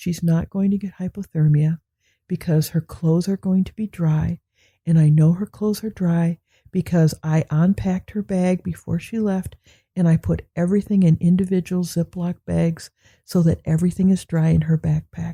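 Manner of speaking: very calm, patient, measured, level-headed delivery. Retelling what Dave said about the worry over snowstorms: imitating Dave speaking calmly. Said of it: "he says very calmly".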